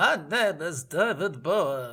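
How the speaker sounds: imitated nonspecific European accent. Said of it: "Indeterminate European accent".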